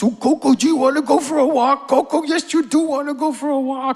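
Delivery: very high, loud, cute voice. Speaker recalling talking to the family dog, in a cute little doggy voice. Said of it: "I had a cute little doggy voice".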